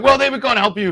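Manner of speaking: mock full-on yell, high and loud. Retelling what the bank tellers said: imitating someone shouting.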